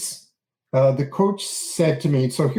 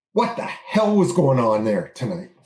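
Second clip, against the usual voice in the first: mock fit-to-be-tied angry, demanding tone. A father retelling what he said to his son, retelling an angry question. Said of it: "in an angry tone".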